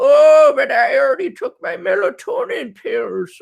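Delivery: put-on very high, creaky old-man voice. Speaker retelling what he told himself one night, in an old man voice. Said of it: "Sounding like the old fart I am".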